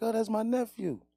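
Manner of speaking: tearful, sobbing, crying through the words. Acting out a mother on the phone after a shooting: imitating a mother crying. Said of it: "is she crying like".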